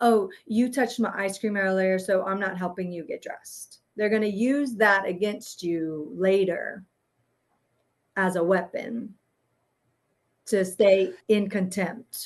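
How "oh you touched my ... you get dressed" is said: put-on ugly, nasty passive-aggressive tone. Showing how a narcissist gets back at someone later: mock passive-aggressive tone. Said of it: "ugly to you all day in a passive aggressive way".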